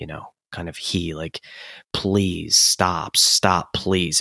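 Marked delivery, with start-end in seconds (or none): 1.9-4.2 put-on pleading voice. Quoting the main character's repeated refrain to somebody: imitating someone pleading. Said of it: "he's pleading to somebody".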